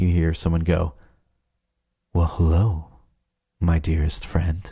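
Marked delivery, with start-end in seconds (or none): 2.1-4.7 low, deep, sultry put-on voice. Retelling someone at the door answering, in a deep, sultry voice. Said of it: "in this real deep, sultry voice".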